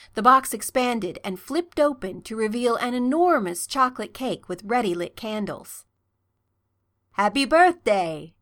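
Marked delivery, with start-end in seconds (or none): 7.1-8.1 bright, pleased, cheery, raised voice. Harry speaks to Draco after revealing a cake with lit candles, cheerfully. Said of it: "Harry said cheerfully".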